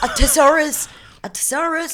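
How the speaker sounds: put-on Irish accent, very high-pitched. Asked to say the word with an Irish accent, attempted Irish accent. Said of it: "avec l'accent irlandais?".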